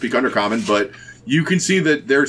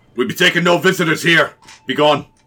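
gruff, male dwarf voice; 4 semitones higher, 3 dB louder than usual. A voice from inside a bunker calls out to the visitors, gruff dwarven voice. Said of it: "gruff, male-sounding dwarven voice".

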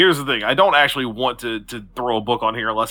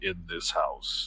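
low, slow, hushed trailer voice, dropping lower. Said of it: "the lower and lower pitched voice saying".

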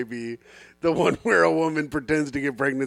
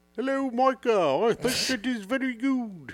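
put-on British accent, pitched up; 9 semitones higher, 5 dB quieter than usual. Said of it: "he has a British accent".

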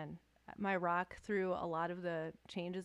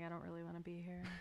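put-on uninterested deadpan, much quieter; 8 dB quieter than usual. Describing some people he interviews, imitating a mock-deadpan interviewee.

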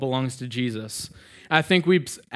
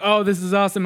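put-on bright, all-happy, high delighted voice; 7 semitones higher, 4 dB louder than usual. Retelling a daughter's reaction to the bottle: imitating someone happy. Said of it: "she's all happy".

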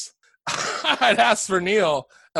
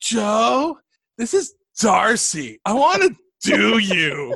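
put-on raspy teen voice, very slow and drawn out; 4 semitones higher, 4 dB louder than usual. Retelling a prank phone call from a girl: imitating Molly's raspy voice. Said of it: "she had a kind of a raspy voice".

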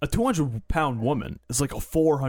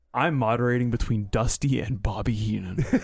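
put-on worn-down, beaten, resigned voice; 3 semitones lower than usual. Retelling what a commentator said during a match: imitating a defeated voice. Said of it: "a defeated voice".

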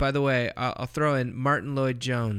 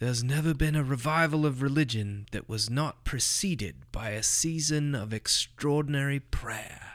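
lovely put-on British accent; 3 dB quieter than usual. Quoting a theologian from memory: imitating George Orr's British accent. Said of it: "speaking in some kind of lovely British accent".

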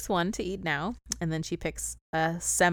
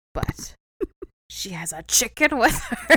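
high, raised talking rock creature voice; 6 semitones higher, 8 dB louder than usual. Retelling a story, the speaker gives the rock's line; voicing a talking rock. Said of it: "And then the rock says".

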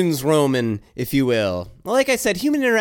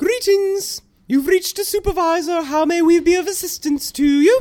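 stately, regal British tone, very high; 12 semitones higher than usual. Answering a customer's call as the supervisor, Queen of England voice. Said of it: "and now the Queen of England?".

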